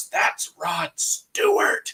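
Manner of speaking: soft, breathy whisper under the breath. Retelling how mom whispered a warning in a line: imitating a whisper. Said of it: "she whispers to us".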